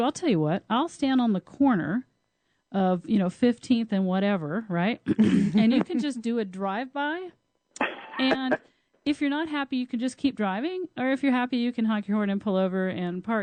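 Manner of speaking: play-acted, tongue-in-cheek, facetious, joking tone. Retelling own reply to a man on a dating call: retelling own facetious reply. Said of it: "And so facetiously".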